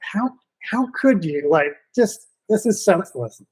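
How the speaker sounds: acted-out furious, heated, angry outburst. Retelling shouting at a fleeing kid: retelling angry words. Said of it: "I was so mad".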